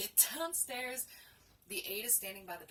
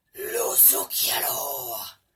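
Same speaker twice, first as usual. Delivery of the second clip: deep, booming, very loud demonic bellow; 5 semitones lower, 14 dB louder than usual. Retelling how a woman turned toward an aide, loud demon voice. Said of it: "in her loudest demon voice ever".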